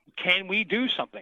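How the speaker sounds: high, begging, imploring pleading tone. Recalling asking the band again and again before leaving it, retelling a plea. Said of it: "There was pleading".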